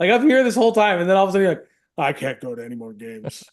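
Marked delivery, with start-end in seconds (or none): 2.0-3.4 hushed, mournful, very quiet, sad voice. Imitating the other speaker refusing more games: imitating a sad voice. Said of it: "He's really sad about this".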